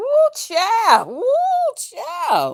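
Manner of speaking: very high, slow, drawn-out, swooping sing-song voice. Recalling a moment, speaking in a Paulette character voice. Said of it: "in my Paulette voice".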